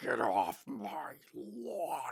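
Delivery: low, very slow, deliberate, dragged-out delivery. Acting out a neighbor telling others to keep off his lawn: Clint Eastwood Gran Torino voice. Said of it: "Like Clint Eas-, Eastwood in Gran Torino".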